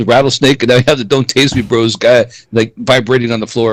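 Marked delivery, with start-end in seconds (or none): none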